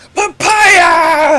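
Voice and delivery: very high, drawn-out, full-lunged bellow. Voicing a character who gets too excited in the crowd: shouting at the top of his lungs. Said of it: "He shouts at the top of his lungs".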